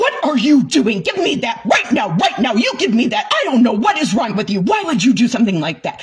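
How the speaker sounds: fast, angry mom-style scolding voice. Retelling confronting a man unsheathing a katana: mock angry-mom scolding. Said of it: "I just went into straight angry mom mode".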